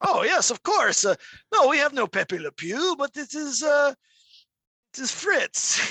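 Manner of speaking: high mock French voice.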